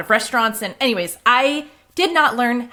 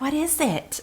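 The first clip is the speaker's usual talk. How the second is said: soft, meek, sheepish voice; 4 semitones higher, 7 dB quieter than usual. Retelling his reaction to a home-cooked dinner, imitating a sheepish question. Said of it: "he's like very sheepishly".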